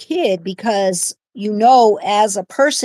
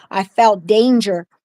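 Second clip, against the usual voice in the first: normal talking voice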